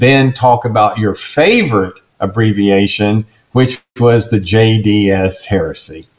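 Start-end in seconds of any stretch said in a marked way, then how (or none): none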